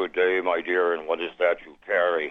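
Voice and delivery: sepulchral, deep, low voice from the grave. Storyteller voicing a creature she meets around the corner, deep charnel-house voice. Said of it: "with a deep, charnel house voice".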